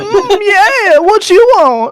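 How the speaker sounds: very high, slow, buzzing mosquito-like whine. Voicing a mosquito cloud that a player speaks to: mosquito voice. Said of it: "I have a mosquito voice".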